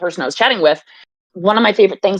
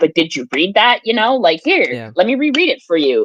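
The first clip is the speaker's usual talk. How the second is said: patronizing, condescending, talking-down tone. Retelling a TV exchange, quoting Bill Maher condescendingly. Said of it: "he's very condescending about it".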